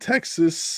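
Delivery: voice cracking up high.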